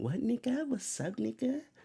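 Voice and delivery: very high-pitched voice in a Mexican style. Imitating how some Mexicans sound when they say the word. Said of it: "type Mexicans that sound just like this".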